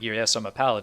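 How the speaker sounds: ordinary talk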